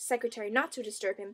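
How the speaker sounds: plain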